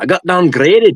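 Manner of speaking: very high, botched Scottish-Irish accent, a bad impression. Recalling a comedian's bit to others, do a bad Jim Jefferies impression. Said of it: "I don't know why I kicked into a".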